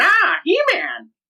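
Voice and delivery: very high, villainous cartoon voice. Showing the only bit of a Skeletor voice they can do: Skeletor voice. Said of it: "all I can really do is that".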